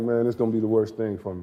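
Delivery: plain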